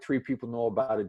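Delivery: plain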